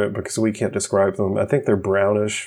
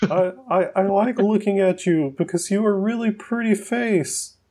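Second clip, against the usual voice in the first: put-on voice at a much higher pitch; 11 semitones higher than usual. Retelling what Mark said to them, the speaker imitates Mark's voice. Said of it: "I'll do my Mark voice".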